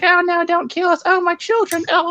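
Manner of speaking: tiny, little, squeaky voice, very high pitched. Retelling squishing tomatoes in play while giving them little tomato voices. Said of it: "giving little voices like".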